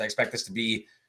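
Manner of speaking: ordinary talk, nothing marked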